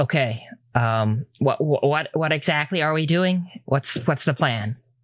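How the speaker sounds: hushed, quiet tones. A character sits down with the group and speaks in hushed tones. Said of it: "in hushed tones".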